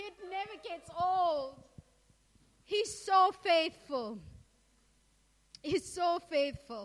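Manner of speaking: crying through words, tearful, voice breaking. Explaining to listeners why this never gets old; crying, voice breaking. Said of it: "now I'm crying".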